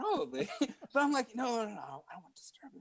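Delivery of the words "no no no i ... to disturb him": hushed, soft whisper under the breath. Retelling declining to go meet someone, re-enacting a whisper. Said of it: "But I'm like whispering, just like, just like this".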